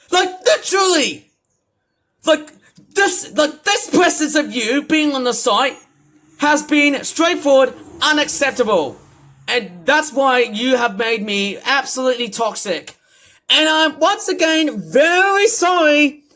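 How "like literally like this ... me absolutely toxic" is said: really mad, venting, very angry rant. Speaking directly to the person they are mad at, very angry. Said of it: "I am actually straightforward very angry".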